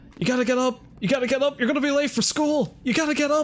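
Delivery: put-on very high, fast, rattled-off panicked yelling. Retelling how a brother burst in: imitating panicked yelling. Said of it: "he started yelling in a panic".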